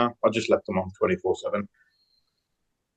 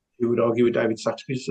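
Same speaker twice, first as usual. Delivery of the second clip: plain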